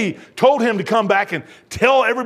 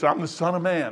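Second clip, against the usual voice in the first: ordinary talk, nothing marked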